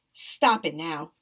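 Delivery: severe, low, stern voice. A woman reacts to a boy joking that he's going to die, stern. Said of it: "she told him sternly".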